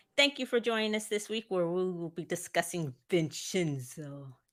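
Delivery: bad, horrible fake Italian accent. Co-hosting a podcast intro about Vincenzo: horrible Italian accent. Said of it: "Did you like that Italian accent?".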